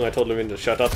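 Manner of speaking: usual speaking voice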